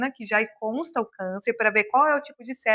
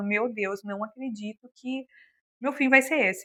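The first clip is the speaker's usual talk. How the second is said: put-on desperate, despairing, hopeless cry of disbelief; 3 dB quieter than usual. Retelling own words from a time of panic over exams: retelling own desperate words. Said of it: "eu tava muito desesperada e falando".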